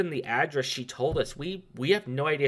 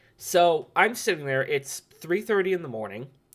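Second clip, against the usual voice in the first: normal talking voice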